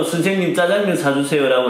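ordinary talk

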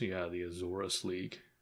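very hushed, grudging mutter under the breath. Voicing a character remark about the league: muttering under his breath. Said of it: "under his breath, he mutters".

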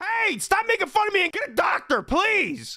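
voice going up, protesting, pleading. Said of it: "she doesn't appreciate you raising your voice at her".

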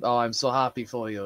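ordinary talk

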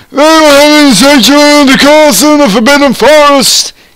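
enraged, furious, shrill, very high-pitched yell. Narrator reading a character's line in a story: furious yelling. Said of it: "He yelled in a furious voice".

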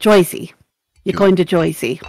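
put-on New Jersey accent and dialect. Showing the other speaker how the Jersey dialect sounds, in a put-on New Jersey accent. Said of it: "That's that accent".

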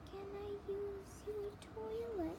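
very high, soft little moan. Narrator reads Wolfman's reply to the police chief, a little moany Wolfman voice. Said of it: "in a little moany voice".

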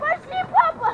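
very loud, high-pitched shouted call. Someone calls to their dad to come along, yelling. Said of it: "Не ори!".

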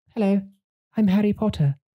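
high, hoity-toity posh English accent. Describing accents in movies, a speaker does a hoity-toity Harry Potter accent.

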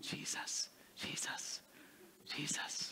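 put-on soft whispered voice of a little kid.

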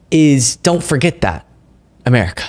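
imploring, earnest, begging tone. Asking viewers not to forget, begging and pleading. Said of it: "now I'm the one begging and pleading".

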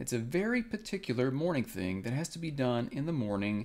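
ordinary delivery

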